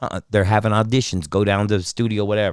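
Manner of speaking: normal talking voice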